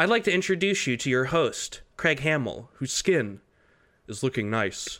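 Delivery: fake synthetic voice. Introducing a podcast special as an AI-generated copy of a voice: put-on AI voice. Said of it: "I am an A I voice generated from clips".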